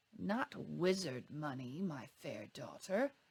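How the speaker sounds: purring low creature voice. Narrator reads a goblin's reply to Petra, in a low purring goblin voice. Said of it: "the second goblin purred in its low voice".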